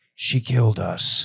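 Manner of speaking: imitated, mimicked whispered voice. Retelling a voice heard on police body cam footage, retelling a whisper. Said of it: "like in a whisper".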